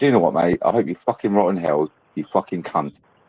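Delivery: mock furious, angry rant. Retelling ending an argument on a live stream: retelling own angry outburst. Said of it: "I was getting that angry".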